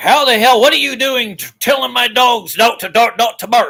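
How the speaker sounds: mock-indignant tone. Telling off a neighbor's barking dogs, imitating an indignant dog owner. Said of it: "you're that attitude".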